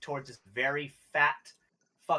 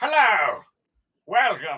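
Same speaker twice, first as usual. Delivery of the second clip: booming theatrical villain voice, big pitch swings; 3 semitones higher, 8 dB louder than usual. Game master voicing the Rat King greeting the players: Tim Curry-type voice. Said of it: "a Tim Curry type of voice".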